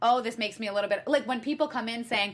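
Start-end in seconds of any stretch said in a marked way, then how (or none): none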